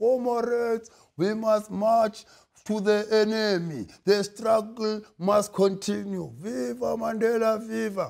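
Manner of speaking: slow, drawn-out delivery. Mocking a politician who sounds like an ANC branch member from Limpopo: imitating Mmusi Maimane as ANC member. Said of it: "he sounds like an A N C branch member from Limpopo".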